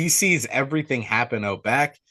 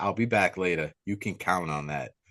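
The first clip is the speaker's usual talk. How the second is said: very threatening, low, menacing tone; 5 semitones lower, 6 dB quieter than usual. Retelling a customer's parting words to a manager: imitating a threatening tone. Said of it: "Like, very threatening".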